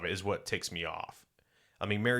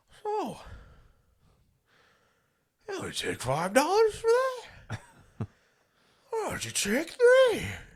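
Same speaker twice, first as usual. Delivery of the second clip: very high, loud, sing-song voice; 6 dB louder than usual. Retelling haggling at a flea market: imitating grandpa's voice. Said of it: "That's my grandpa's voice".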